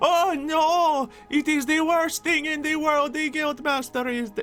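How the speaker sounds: acted, mock grieving tone. Showing how a fake mourning act could have gone: acted-out mock grief. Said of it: "acted it out".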